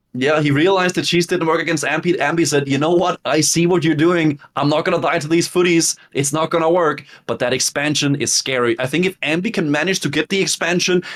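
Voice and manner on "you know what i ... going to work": ordinary delivery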